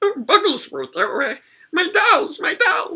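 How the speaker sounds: strained, squeezed voice. Showing a go-to monster voice from the show: tightened Bugglesworth voice. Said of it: "you tighten up your voice".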